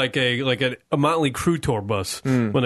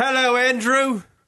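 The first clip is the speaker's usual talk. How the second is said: fake British accent, higher pitch; 10 semitones higher than usual. Greeting a caller from across the pond: put-on British accent. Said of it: "Why do we have to put on the accent?".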